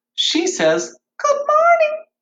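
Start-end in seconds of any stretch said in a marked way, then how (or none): 1.2-2.0 very high, loud little bunny voice. Telling a story of a bunny meeting a frog, voicing the bunny, high bunny voice. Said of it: "Bunny had that nice high voice".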